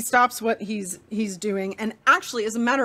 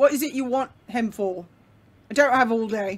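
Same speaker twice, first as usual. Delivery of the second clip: curt, blunt, gruff man voice. A man answers someone looking for Millen Rodham, blunt gruff man voice. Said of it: "pretty like a blunt, just gruff man".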